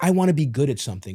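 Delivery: ordinary delivery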